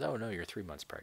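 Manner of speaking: ordinary delivery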